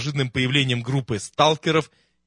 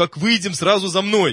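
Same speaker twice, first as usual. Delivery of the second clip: annoyed, testy, irritated, pitched-up voice; 6 semitones higher, 3 dB louder than usual. An officer lifts his gas mask and gives the group an order, irritated. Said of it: "раздраженно произнес".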